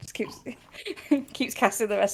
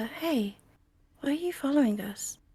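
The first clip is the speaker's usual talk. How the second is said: whispered, higher pitch; 4 semitones higher than usual. Sending a magic message to a creature that follows them: whispering. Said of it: "I'll whisper".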